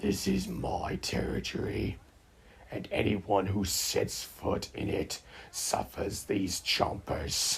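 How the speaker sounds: growling, rough, creaky, snarling dog voice. Narrator voicing a dog guarding his territory against two other dogs, snarling. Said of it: "snarled and bared his teeth".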